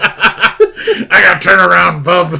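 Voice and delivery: mocking impression voice, high, loud, slow, laughing.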